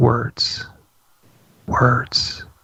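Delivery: imitated halting, hushed whisper. Retelling how a woman's voice changed while talking, imitating a halting whisper. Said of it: "she literally just kind of whispers as she talks".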